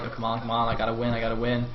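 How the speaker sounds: ordinary delivery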